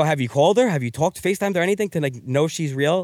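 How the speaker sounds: ordinary delivery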